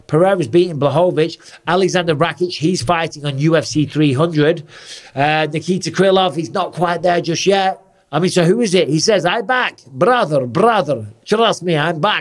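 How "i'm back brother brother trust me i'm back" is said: put-on Dagestani accent. Being silly while speaking as a fighter who is not from Dagestan, in a put-on Dagestan accent. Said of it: "I don't know why I talk like this, because he's not from Dagestan".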